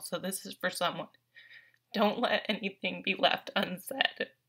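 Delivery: tearful, choked-up, moved, emotional voice. Giving advice from a tarot card reading to listeners, getting really emotional. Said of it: "I'm getting really emotional".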